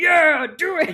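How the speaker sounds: very loud, high, excited put-on manly voice. Describing an impression of themself, showing the put-on excited man voice. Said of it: "like the man voice comes out".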